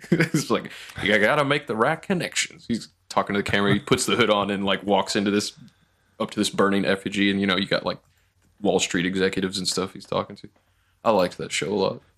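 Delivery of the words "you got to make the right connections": put-on Southern accent, pitched higher. Quoting a Southern senator character from a show: imitating a Southern senator accent. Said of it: "you did that accent".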